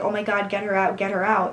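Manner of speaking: ordinary talk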